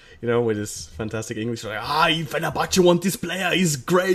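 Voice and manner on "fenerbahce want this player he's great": put-on Austrian-German accent, higher and slower. Speaker retelling what his cousin said about a football player: Arnold Schwarzenegger accent. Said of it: "make him sound like like fucking Arnold Schwarzenegger".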